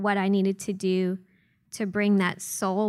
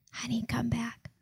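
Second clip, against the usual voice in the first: soft, tender, fatherly hushed whisper; 3 semitones higher, 6 dB quieter than usual. Retelling how the translator whispered in her ear like a father: imitating someone whispering. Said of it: "he whispers in her ear".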